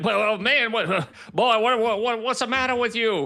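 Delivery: high, sputtering, blustering Southern drawl. React to therapists breaking their codes of ethics, in a Foghorn Leghorn voice. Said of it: "I feel like Foghorn Leghorn".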